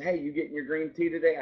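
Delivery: mimicked whisper. Recounting what a man from behind the counter whispered in line, retelling a whisper. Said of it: "he kind of whispered".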